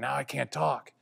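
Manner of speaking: barely audible, voiceless, very quiet half-whisper. Telling a story about surgery, quoting what was said back then: re-enacting a half-whisper. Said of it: "I was whispering".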